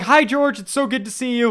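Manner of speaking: very high, very loud, super-excited gushing squeal. Retelling a movie scene where a character greets George: imitating someone super excited. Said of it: "is super excited".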